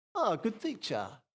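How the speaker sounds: mocking, put-on sarcastic tone. Acting out how a questioner might greet a teacher: mock sarcastic. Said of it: "Is he being sarcastic?".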